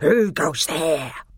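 snarling, harsh, challenging tone. Two sentinel badgers leap up with bared teeth and challenge the arrivals: snarling voice. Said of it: "asked in snarling voices".

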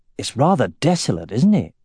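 ordinary delivery, nothing marked

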